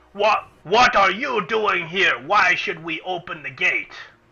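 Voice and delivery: orcish guard voice. Storyteller voicing someone calling down from the top rampart, in an orcish voice. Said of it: "you hear a orcish voice from the top rampart".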